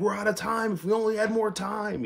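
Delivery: very high, screamed announcer voice. Retelling what the announcer yelled when the show ran out: imitating Tony Schiavone screaming. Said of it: "Tony Schiavone would be screaming".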